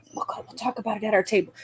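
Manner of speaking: hushed, very quiet whispered aside. Speaking in character to a companion while rising from a table: whispering.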